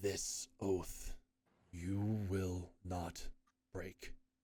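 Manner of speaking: grief-stricken, low, slow, grinding gravelly voice. Narrator voicing a woman's voice echoing from the cliffs, heartbroken gravelly woman's voice. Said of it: "a woman's voice, heartbroken, like gravel grinding".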